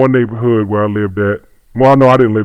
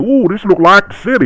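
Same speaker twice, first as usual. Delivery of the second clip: put-on backwoods rural country accent, pitched up; 9 semitones higher than usual. Recalling how the speaker talked as a kid from Deep Sticks, USA: rural country accent. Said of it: "I really used to talk like that too".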